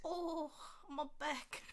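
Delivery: put-on high, frail, decrepit old woman voice. Joking after a gasp and a saved sound bit: fake decrepit old woman voice. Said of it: "What decrepit old woman did you have on the podcast to say that?".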